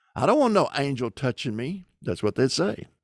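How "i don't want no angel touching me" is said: normal talking voice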